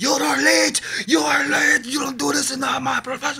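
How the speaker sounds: very high, loud, frantic, furious screaming. Retelling how the owner ran out at the late band: imitating someone screaming. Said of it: "starts screaming at us".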